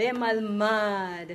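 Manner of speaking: bemalmad with weight on final syllable -mad. Reading lesson on accent marks: stress on last syllable of Bemalmad. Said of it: "the accent is at the end syllable, the last syllable of the word".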